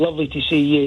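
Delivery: normal talking voice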